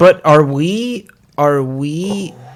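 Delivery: slow, drawn-out speech. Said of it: "you're talking too slow".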